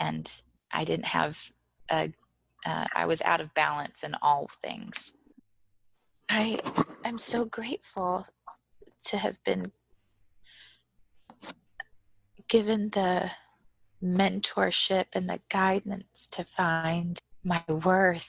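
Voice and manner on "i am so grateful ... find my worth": tearful voice, close to crying. Speaker giving thanks for mentorship and guidance, crying. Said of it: "I'm just gonna cry a lot. Sorry".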